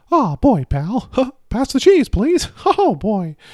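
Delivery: high, loud squeak with swooping pitch. Showing off a favourite impression on the podcast, Mickey Mouse impression. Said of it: "I do a pretty good Mickey Mouse impression".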